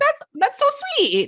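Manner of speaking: very high, fake sweet, gushing acted voice. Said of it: "you're the worst actress".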